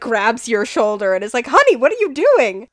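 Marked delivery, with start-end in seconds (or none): 1.5-2.5 exceedingly alarmed, loud voice. A mother sees her kid dunk their head in a pot: alarmed mother. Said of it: "She looks exceedingly alarmed".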